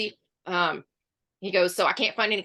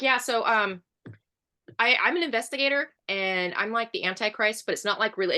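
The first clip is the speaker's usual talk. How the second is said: ordinary delivery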